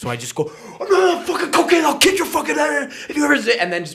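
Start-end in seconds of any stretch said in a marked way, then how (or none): 0.8-3.4 mock outraged comic overreaction, higher pitch. Retelling a reply to a heckler on stage: imitating a comedic overreaction. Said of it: "comedically overreact".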